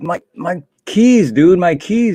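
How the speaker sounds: put-on annoyed, fed-up tone, high and drawn out. Retelling asking someone about lost car keys while running late: retelling being irritated and mad. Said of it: "getting like irritated and mad".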